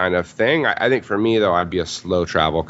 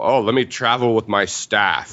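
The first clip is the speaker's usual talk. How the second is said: mock pretentious, snobby rich voice; 3 semitones higher than usual. Telling a friend how they would sound in the States: mock pretentious rich snob. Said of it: "I would sound like some like pretentious rich asshole".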